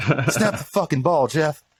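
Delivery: mock furious, high, angry yelling. Retelling how the quarterback yelled at his center: imitating someone yelling angrily. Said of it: "he's just yelling at him".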